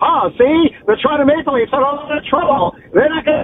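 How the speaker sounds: put-on old-fashioned twenties voice. Podcast host going old school on the Toronto Maple Leafs, 1920s old-timey voice. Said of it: "Do you want me to do like a 1920s voice".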